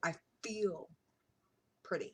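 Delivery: voice catching with emotion. Speaking about long being self-conscious, then getting choked up. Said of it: "I'm gonna get choked up now".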